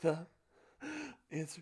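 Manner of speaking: high, panting, breathless delivery. Joking about panting in class, gasping like Stevie from Malcolm in the Middle. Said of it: "You're like that kid from Malcolm in the Middle".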